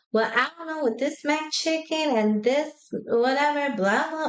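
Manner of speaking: rambling Georgia-style Southern drawl. Mimicking how Southern people talk: imitating a Southern accent. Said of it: "they talk".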